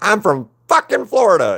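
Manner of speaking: mock very high, swooping, full bellowed yell. Recalling meeting a voice actor, speaker retells his bellowed yell. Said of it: "He just yelled it out".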